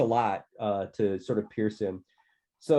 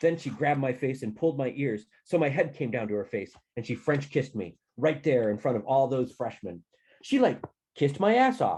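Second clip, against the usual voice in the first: ordinary delivery, nothing marked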